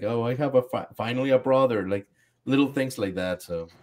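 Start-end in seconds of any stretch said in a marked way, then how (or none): 0.0-1.9 mock crying, sobbing, broken-up delivery. Retelling a scene where Zeke cries over small moments: imitating Zeke crying. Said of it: "crying, like".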